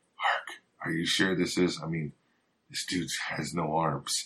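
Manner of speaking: half-whispered, hushed and confiding. Acting out a character's aside about another man: whispering. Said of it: "kinda whispering to Hark".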